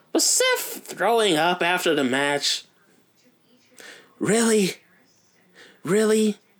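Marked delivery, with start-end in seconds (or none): 4.2-6.3 high wrestler catchphrase voice, hit hard, up high. Reacting to Seth throwing up after the match, in your best Miz voice. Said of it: "In my best Miz voice?".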